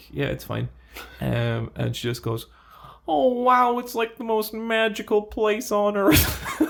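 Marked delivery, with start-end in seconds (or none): 3.1-6.6 put-on American accent, very high pitched. Imitating an American girl looking around Temple Bar: imitated American accent. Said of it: "your impression of the American tourist in Temple Bar".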